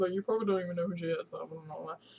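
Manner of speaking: fast, mumbled muttering under the breath. Retelling a mix-up over her friend's stuff, she repeats her aside: retelling her own mumbling. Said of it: "Just mumbling to myself".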